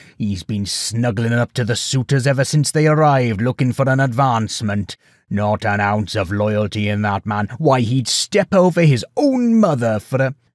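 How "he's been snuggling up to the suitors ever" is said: plain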